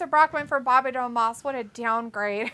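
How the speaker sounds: ordinary delivery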